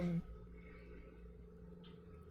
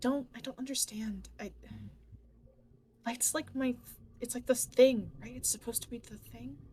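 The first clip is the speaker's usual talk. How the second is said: soft, whispered muttering under the breath. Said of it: "just sort of under their breath".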